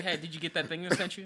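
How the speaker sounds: breezy, offhand, vague casual tone. Imitating the other speaker sending over a beat: imitating a friend sending a beat. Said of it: "what you're like whenever you send".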